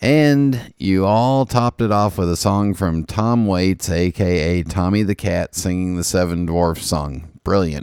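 plain

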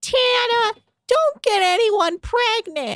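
put-on very high, slow, child-sounding voice. Retelling what a mother on a show said to her son: imitating a childlike voice. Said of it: "she sounds like a child".

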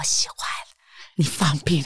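imitated seductive voice. Retelling what the hugging partner said in the contest: imitating a very sexy voice. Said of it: "用非常sexy 的声音说".

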